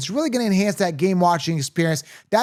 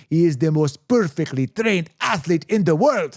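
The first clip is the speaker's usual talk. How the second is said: poor, badly done fake Russian accent. Quoting the Russian boxer's trainer from a Rocky film: bad Russian accent. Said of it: "that was a bad accent".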